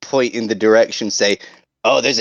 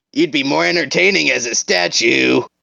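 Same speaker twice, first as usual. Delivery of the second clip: shouting, higher pitch; 4 semitones higher than usual. Calling after a goblin as he walks away: hollering after someone. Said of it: "Itchy hollers after him".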